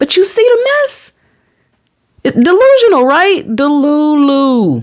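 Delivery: very high, full-on, high-pitched yelling. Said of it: "Excuse me if I'm yelling in your ear".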